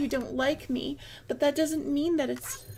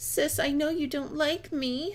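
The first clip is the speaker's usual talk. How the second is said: put-on childish, babyish baby-talk voice. Questioning someone about how they always start talks with their sister, baby voice. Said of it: "and you use this baby voice".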